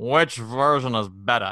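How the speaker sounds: world-weary, unimpressed, jaded, bored, drawn-out drawl.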